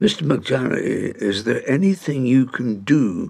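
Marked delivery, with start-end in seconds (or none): none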